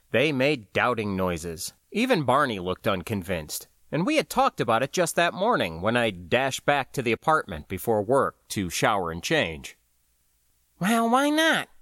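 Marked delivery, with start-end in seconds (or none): 10.8-11.6 shrill, very high-pitched, insistent tone. Fanny responds to the others' doubting noises, demanding. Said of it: "Fanny demanded".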